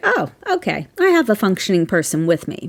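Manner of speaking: plain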